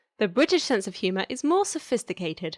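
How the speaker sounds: normal talking voice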